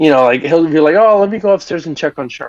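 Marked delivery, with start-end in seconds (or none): 1.0-2.5 mock reluctant, grudging, pitched-up fake concern. Acting out how a character delivers a line, imitating a grudging tone. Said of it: "it almost feels like a chore".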